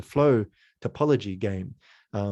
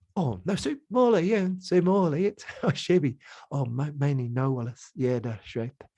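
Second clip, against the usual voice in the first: babbling in a pleasant New Zealand accent; 5 semitones higher than usual. Showing how sounds carry character without words: nice New Zealand-sounding gibberish. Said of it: "the real nice kind of New Zealand".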